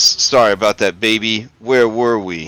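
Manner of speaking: deep, resonant, sonorous voice with rumbling low tones. Narrating a moose speaking to its mate in a game, in a deep, sonorous voice. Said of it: "in a deep, sonorous voice, it says".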